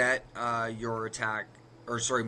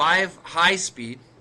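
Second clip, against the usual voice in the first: five high speed stressed, slow and loud. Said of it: "so again".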